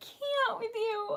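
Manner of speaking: slow, choked-up, tearful, overwhelmed crying.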